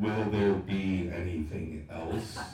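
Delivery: deep, bass-heavy, booming voice dripping with echo. Retelling how the cashier looked right down at them, in a deep bass-heavy echoing voice. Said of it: "in a voice dripping with bass and echo says".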